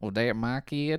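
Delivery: put-on country star accent. Retelling a movie plot, quoting the country star in a put-on country accent. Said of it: "that was like, a good accent again".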